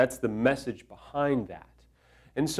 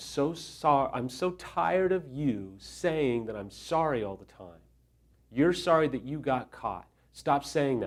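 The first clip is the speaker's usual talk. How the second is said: mock fed-up, angst-filled, angsty, frustrated voice; 5 dB quieter than usual. Retelling a story someone tells, speaker quotes the complaint with mock-frustrated angst. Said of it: "She didn't say it with that much angst, I don't think. That was just my spin on it".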